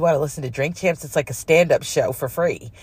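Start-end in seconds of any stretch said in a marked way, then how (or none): none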